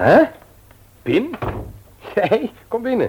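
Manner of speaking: very high, slow, drawn-out, astonished voice. [name] calls in a visitor and finds it is Pim, surprised. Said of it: "Waarom doe je zo verbaasd".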